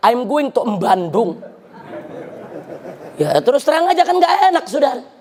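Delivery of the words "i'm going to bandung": slow English in a Javanese lilt. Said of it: "ada yang baca begini".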